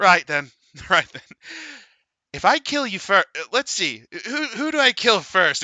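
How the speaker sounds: put-on high drunk voice. Narrating a game scene, the speaker voices a character who pulls out a flame unit: drunk character voice. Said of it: "he's like completely smashed".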